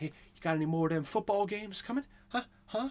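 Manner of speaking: high, itchy, fiending put-on voice, pleading. Joking about craving football, in a Tyrone Biggums voice.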